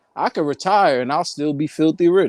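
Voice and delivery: ordinary talk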